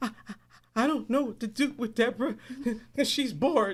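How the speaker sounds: talking while crying, tearful and sniffling. Retelling a teacher's phone call to a mother: imitating someone crying. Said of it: "called her crying, like, sniffling".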